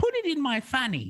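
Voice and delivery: put-on very high-pitched English woman's accent. Quoting what a woman said on the back of the bus: british accent. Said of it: "such a great British accent".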